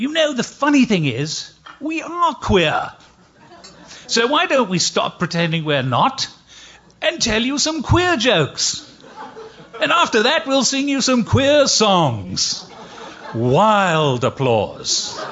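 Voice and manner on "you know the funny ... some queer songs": put-on English accent, very high and swooping. Quoting a partner who picks up his guitar and speaks, English accent. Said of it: "in his best English accent".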